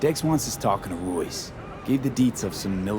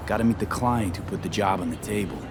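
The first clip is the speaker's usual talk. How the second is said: ordinary talk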